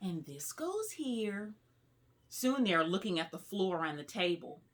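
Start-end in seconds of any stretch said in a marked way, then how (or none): 0.0-1.5 loud, carrying stage whisper. Reading a story aloud, voicing a student at the puzzle table: loud whisper. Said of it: "Nikki says in a loud whisper".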